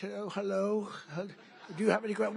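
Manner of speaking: sweet, light, feigned innocent tone. Speaker retells facing shouting reporters at a news conference, mock-innocent. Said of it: "I'm standing there very innocent".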